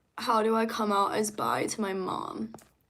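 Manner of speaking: ordinary talk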